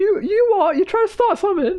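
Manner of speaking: very high-pitched, would-be tough, combative voice. Retelling a man who got out of his car to start a fight, really high-pitched voice. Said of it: "his voice was uh, uh, really high pitched".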